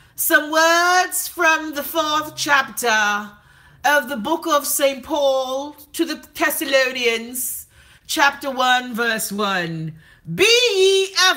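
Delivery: slow, put-on British accent. Imitating an Anglican priest reading scripture: put-on British accent. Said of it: "they so fucking British".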